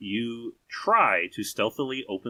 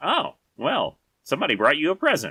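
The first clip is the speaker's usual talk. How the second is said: high, fast, sweet, teasing mock woman's voice. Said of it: "She goes".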